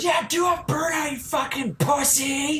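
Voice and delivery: mock, very high-pitched, drawn-out, taunting, jeering shout. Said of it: "One of them shouts".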